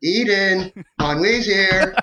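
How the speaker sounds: put-on high, very slow, drawn-out young kid voice. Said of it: "in your best twelve-year-old Boba Fett voice".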